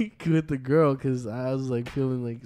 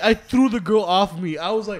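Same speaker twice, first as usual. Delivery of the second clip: usual speaking voice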